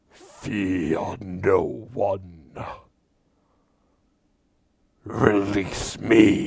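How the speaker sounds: deep, loud, ground-shaking rumbling boom. Narrator voicing a being chained in a huge box, Tharizdun's rumbling voice. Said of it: "You hear a rumbling voice".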